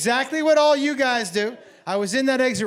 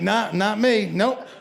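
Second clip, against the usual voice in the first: ordinary talk, nothing marked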